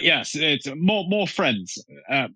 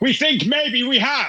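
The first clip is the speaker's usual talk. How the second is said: very high, upward-pitched shouting; 11 semitones higher than usual. Answering whether they have found one yet, shouting. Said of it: "I'm shouting at the harmony".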